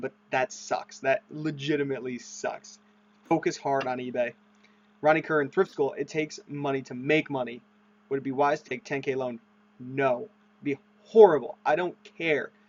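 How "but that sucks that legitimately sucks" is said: speech broken up by laughing. Reacting to a viewer's bad news, laughing while talking. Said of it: "Sorry I'm laughing".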